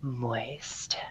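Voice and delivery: very soft, very quiet, hushed asmr delivery. Saying a word because a viewer asked for the ASMR voice: ASMR voice. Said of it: "say moist in my A S M R voice".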